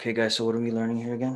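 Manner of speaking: put-on low-key, low, flat monotone. Retelling joining a class on camera, speaker repeats own words in low-key monotone. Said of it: "kept it low and just kept it kind of low key and just monotone".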